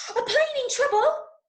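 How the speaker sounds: rushed, rapid-fire, very high-pitched delivery. Speaker coaches a listener to try a line three different ways, really fast. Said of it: "You might try it really fast".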